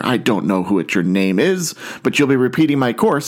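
plain

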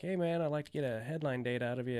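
ordinary talk

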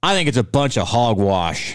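backwoods mountain man voice. Retelling what a man waiting at the post office said: imitating a mountain man voice. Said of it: "He was a mountain man".

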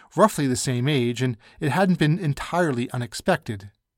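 ordinary delivery

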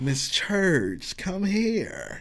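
very slow drawn-out speech. Retelling how a guy in class called a woman over: imitating a real slow voice. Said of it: "He had a real slow voice".

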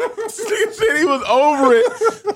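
high, slow laughing disbelief.

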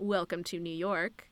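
heavy, exaggerated, low sarcastic tone. Retelling a scene where a man answers a woman's complaint, imitating a sarcastic remark. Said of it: "he says in that sarcastic way".

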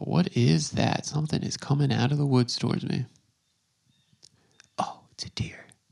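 hushed whisper. Out alone by the woods as something approaches, whispering. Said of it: "I don't know why I'm whispering".

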